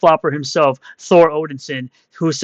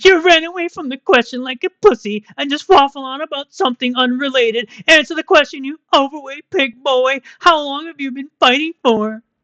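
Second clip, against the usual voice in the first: put-on taunting, mocking voice, pitched very high; 9 semitones higher than usual. Mimicking the person being addressed, in a mocking put-on voice. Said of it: "That's why I use this voice for you every single time".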